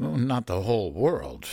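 ordinary delivery

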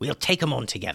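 ordinary delivery

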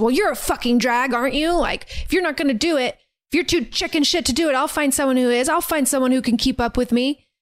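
mock sharp, irritated, angry snap. Retelling a movie scene where he snaps at her: imitating someone snapping angrily. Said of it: "immediately snaps at her and says".

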